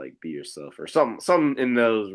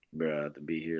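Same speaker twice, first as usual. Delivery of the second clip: mock flat monotone, quieter; 3 semitones lower, 9 dB quieter than usual. Recapping an episode and quoting Mark, imitating Mark's monotone. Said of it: "he was like monotone the whole episode".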